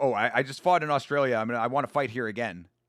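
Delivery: play-acted derisive, mocking voice. Mocking regional prospects who only fight at home: mocking imitation of a homebody fighter. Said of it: "Like, bro, uh, no".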